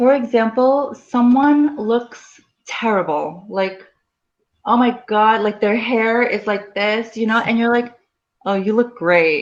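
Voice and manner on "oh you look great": mocking, sarcastic, clearly insincere tone. Showing a learner how sarcasm sounds: sarcastic. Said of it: "but I'm being sarcastic".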